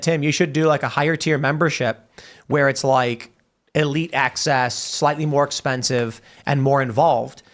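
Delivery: ordinary talk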